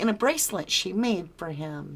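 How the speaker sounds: ordinary talk, nothing marked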